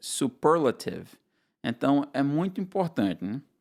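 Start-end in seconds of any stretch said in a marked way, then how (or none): 0.0-1.1 "superlative" with stress on second syllable -per-. Lesson contrasting portuguese and english word stress: stress on second syllable of superlative. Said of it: "no inglês está na segunda sílaba".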